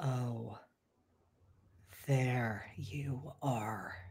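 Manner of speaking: slow, unnatural possessed voice, not his own. Voicing a possessed character grinning unnaturally: voice that is not Luke's. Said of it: "in a voice that is not Luke's".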